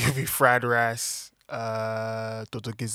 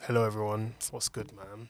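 smooth podcast voice, quieter; 7 dB quieter than usual.

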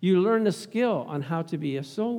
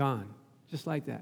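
ordinary talk, nothing marked

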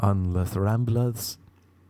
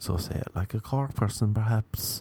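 normal talking voice

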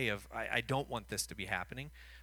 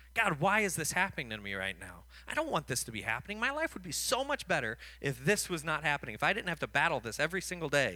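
fed-up, haughty, arrogant, frustrated grumble; 3 semitones higher, 3 dB louder than usual. Speaking to fellow Christians, acting out how we complain to God, mock arrogant and frustrated. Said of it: "in an arrogant, frustrated manner".

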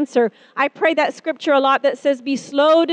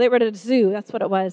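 usual speaking voice

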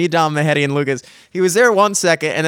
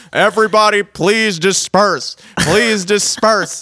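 mild put-on megaphone-style shout; 3 semitones higher than usual. Describing a helicopter above the crowd, imitating a megaphone shout. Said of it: "megaphone shouting down like".

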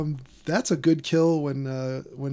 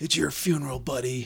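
rough, slow, gravelly action-hero rasp; 5 dB quieter than usual. Quoting a movie character's tough line: imitating a gravelly voice. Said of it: "like you said, the gravelly voice".

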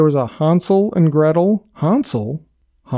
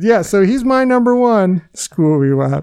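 usual speaking voice

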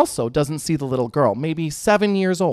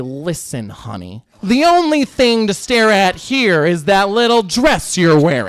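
put-on loud, nasty, catty, sassy teenage boy voice; 3 semitones higher, 6 dB louder than usual.

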